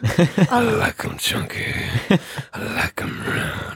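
slow, soft, whispery smoker voice. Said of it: "refers to himself in third person".

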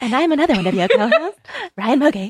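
put-on angelic, sweet nice-girl voice. Podcast co-host mimicking the other co-host's intro, imitating Ryan Mogi's angelic voice. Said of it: "the voice of an angel".

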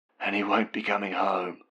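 strained, hoarse whisper. Reading Mum's line spoken on the phone: hoarse whisper. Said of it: "she whispers hoarsely".

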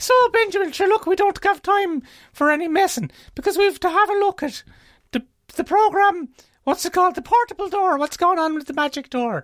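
put-on stage Irish, full broad brogue, fast and comic. Host opening the podcast's special Irish week in character, Paddy O'Wackery Irish voice. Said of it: "special Irish week on Sherlock, Sherlisten, the podcast that talks like this".

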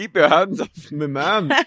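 put-on Scottish accent. Recounting how a woman says a line in a club scene, imitating a Scottish accent. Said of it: "I like that she's Scottish to you".

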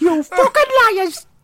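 very high, honking, chimp-like shriek. Acting out a character fleeing the room: honking like a chimp. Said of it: "runs out of the room honking like a chimp".

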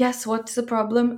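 put-on Italian accent, laid on thick and bad. Retelling a man coming to the door, in a thick italian accent. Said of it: "just imagine thick Italian accent".

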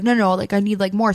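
ordinary talk

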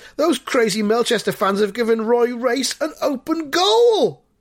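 high, shouted fan yelling. Reading the story aloud, voicing a Highborough fan watching the match: shouting. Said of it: "a Highborough fan shouts".

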